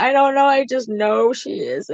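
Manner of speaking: crying panic, voice way up high, tearful pleading. Retelling answering the father while crying: retelling own crying. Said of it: "I was crying and everything".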